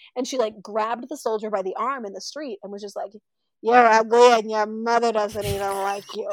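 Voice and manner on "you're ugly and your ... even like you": put-on drunk slurring, louder. Retelling how an old woman mocked a soldier in the street, imitating drunk slurring. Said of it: "slurring her words".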